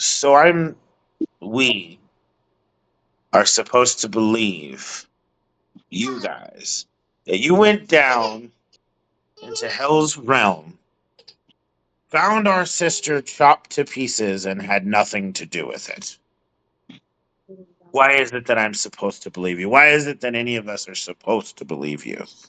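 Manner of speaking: rasping dragon voice, as if several voices speak. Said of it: "his voice rasps, almost as if there's more than one person talking".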